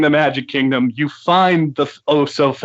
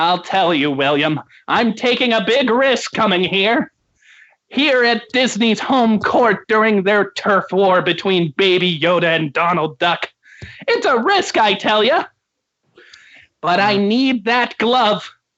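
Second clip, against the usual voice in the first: high, pitched-up cartoon character voice; 5 semitones higher than usual. Asked by William why he's at Disney World, answering him: SpongeBob voice. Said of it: "SpongeBob SquarePants".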